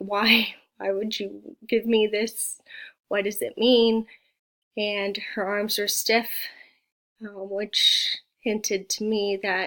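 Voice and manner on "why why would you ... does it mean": pleading, begging voice. Retelling questions asked of a glowing lady in a vision: retelling own pleading. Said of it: "I remember pleading".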